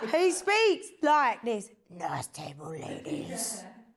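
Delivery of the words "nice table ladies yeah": hushed, breathy, creepy, suggestive voice. Showing how he speaks, do it as a creepy Val Venis impression. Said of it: "He sounds like a creep".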